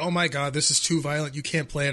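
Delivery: normal talking voice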